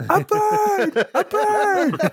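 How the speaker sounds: very high horror-struck scream, "bird" stretched out. Describing a film scene, acting out the sailor's cry: retelling a horrified scream. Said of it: "just starts screaming".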